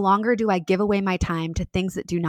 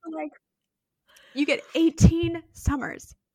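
crying through the words, tearful and pitched up; 8 semitones higher than usual. Sharing words another mom once said to you, crying. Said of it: "I don't know why I'm crying".

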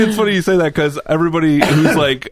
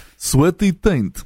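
Russian-accented delivery; 3 semitones higher than usual. Saying a phrase on request, in a Russian accent. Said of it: "Can you say "sweaty taint" in your Russian accent?".

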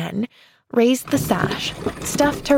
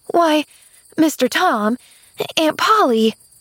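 stammering, much higher, slower; 7 semitones higher than usual. A girl woken by her aunt and a man at the window, stammering. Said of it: "she stammered".

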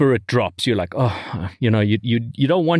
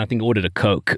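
ordinary talk

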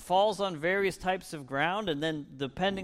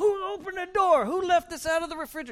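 very high, loud, shrieking scold, acted out; 13 semitones higher, 5 dB louder than usual. Retelling how a friend's mother scolded her children: imitating a mother screaming. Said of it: "Just screamed at him the entire time".

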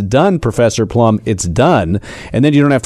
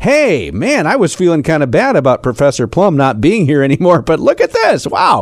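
put-on sarcastic delight, sing-song and gushing; 4 semitones higher than usual. Imagining what a woman might say on logging into her account, sarcastically.

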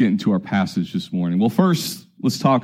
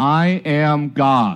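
play-acted plain, distinct, clear, pitched-up delivery; 6 semitones higher than usual. Retelling a slip near the end of a sermon: retelling a loud, clear declaration. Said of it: "very loudly and very clearly".

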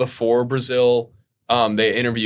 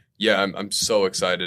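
mock facetious tone, lower; 4 semitones lower, 3 dB quieter than usual. Retelling a driver's interview answer about the sprint race: imitating a facetious reply. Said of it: "he's being facetious".

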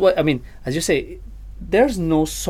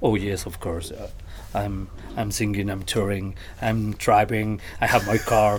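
low, soft, deep put-on interview voice. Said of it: "they took this posture like".

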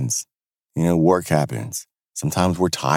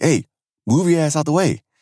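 put-on cold, cutting, very high shout; 10 semitones higher than usual. Recounting a playground scene, the speaker imitates a dad yelling at his daughter, imitating a sharp, cold yell. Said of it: "in a very sharp and cold way".

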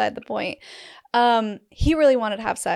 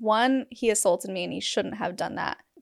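ordinary talk, nothing marked

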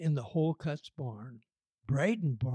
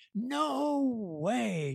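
raised, high-pitched, rough, rasping yell; 8 semitones higher than usual. [name] rejects Gabby's giant duck idea for the float, yelling. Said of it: "[name] yelled".

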